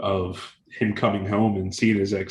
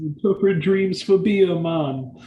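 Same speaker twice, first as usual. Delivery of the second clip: overblown fake Jamaican accent, laid on thick, very high; 9 semitones higher, 5 dB louder than usual. Quoting a movie character who interprets dreams: Robert Marley's overblown Jamaican accent. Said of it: "the very clearly fake Jamaican, with the overblown accent, Robert Marley".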